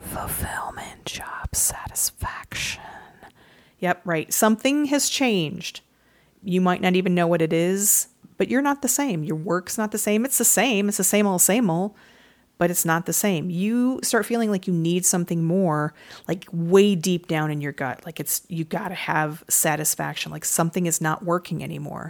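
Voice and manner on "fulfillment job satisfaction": soft, slow ASMR-style whisper. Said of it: "It just kinda whispers in the back of your head, like, like A S M R".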